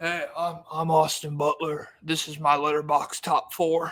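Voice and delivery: put-on theatrical drawl. Joining the joke about how the actor talks: Austin Butler voice. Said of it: "He wasn't talking like that yet".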